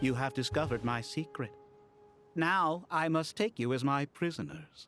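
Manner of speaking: very low, make-believe robot voice. Playing along with kids who ask if he is a robot: pretend robot voice. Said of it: "He's playing along with the kids".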